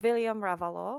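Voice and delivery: put-on German-accented character voice. During a role-play scene, a character greets the group in a German accent. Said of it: "now I gotta do a German accent".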